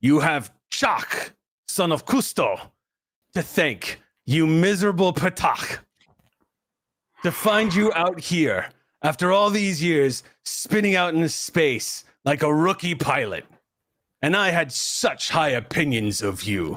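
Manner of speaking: every word grated out. Chak speaks over the comms to the rescued crew, in a grating voice. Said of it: "you hear this grating voice say".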